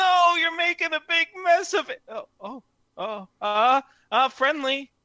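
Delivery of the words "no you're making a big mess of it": put-on voice, relatively high-toned. Imitating a person heard on the convention broadcast, in a relatively high-toned voice. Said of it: "a relatively high toned person be like".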